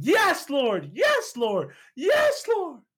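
very high, swooping, climbing, rising screams. Recounting the moment his eyes got healed, retelling a scream. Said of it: "I just started screaming".

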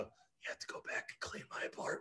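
very quiet, breathy, close whisper. Retelling grabbing a friend in a hospital bed: retelling a whisper. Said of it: "I whisper in his ear".

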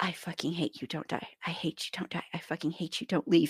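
mock-anguished pleading tone. Recounting a scene where a son confronts his dying father: retelling an anguished outburst. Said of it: "retelling son's anguished outburst at dying father".

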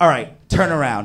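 frustrated, exasperated, commanding tone. Retelling what a partner said after getting frustrated: imitating a frustrated partner. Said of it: "she finally gets frustrated".

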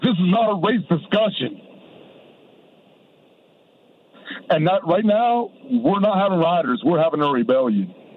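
tearful speech, crying through the words. Speaking on a phone call to the fellas, crying while speaking. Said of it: "I'm crying on the phone with you right now".

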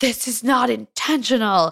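furious, high, out-of-control screaming. Retelling how a man lost it and yelled at Karina: retelling a scream. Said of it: "He just starts screaming".

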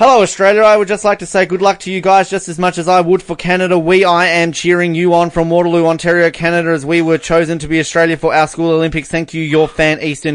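read nonstop in one breath, no pauses. Host reading a fan's message word for word, without taking a breath. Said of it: "just not take a breath".

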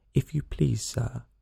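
soft, quiet, timid voice. A girl approaches the rabbit to ask for help: low, timid voice. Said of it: "she began in a low, timid voice".

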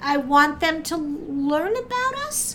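rising inflection, line ending high on us. Quoting what people say they want, with rising inflection. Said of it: "what was it you said with the rising inflection".

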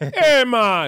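put-on Jamaican accent. Starting a joking bit about coconut water with a co-host, in a Jamaican accent. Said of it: "put on a Jamaican accent for that".

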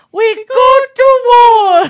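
high, slow, loud battle shout, pirate impression.

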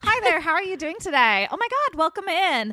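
very high, bright customer-service voice. Speaker shows how they greet people at the store, in their store greeting voice. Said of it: "this is the voice that I use when I greet people at the store".

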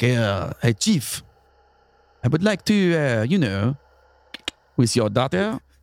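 slick, smooth-talking, casual charming voice. Acting out Louis asking the chief about his daughter: Louis as a smooth talker. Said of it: "He's like".

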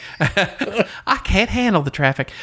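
high-pitched Southern belle impression. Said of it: "my impression of the Southern Belle".

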